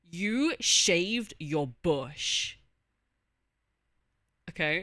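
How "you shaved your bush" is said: angry, much louder and slower. Showing off acting by saying one line in different emotions, now angry. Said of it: "We got angry".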